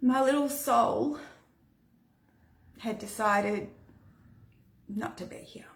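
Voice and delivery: choked-up, halting, breaking voice. Telling a painful memory of a lost pregnancy, getting emotional. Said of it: "getting emotional. Sorry".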